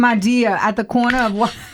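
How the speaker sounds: attempted Boston accent. Taking the paper after another person says they can't do it, trying a Boston accent. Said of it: "Is that New York or is that Boston?".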